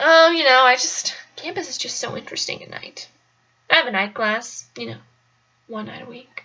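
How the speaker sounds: low, creepy stranger's voice. Retelling what a man on campus at night answered, imitating a creepy voice. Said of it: "his voice sounded like that. It was creepy".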